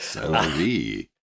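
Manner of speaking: slow, smooth, silky British ASMR voice. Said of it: "could you say cellar door?".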